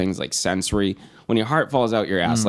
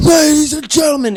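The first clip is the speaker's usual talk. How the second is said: very loud, very high, shrill yelling scream; 8 dB louder than usual. Retelling how a rough-looking man addressed the room: imitating a man screaming. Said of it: "the way he said".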